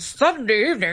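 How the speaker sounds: news anchor reading tone. Describing how newscasters talk, the speaker demonstrates the newscaster tone. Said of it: "we can find the newscaster tone".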